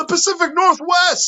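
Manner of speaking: high call sounding distant and far away. Retelling a scene where Newman answers from up a tree: Newman calling from far above. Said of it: "Newman's distant voice from up top".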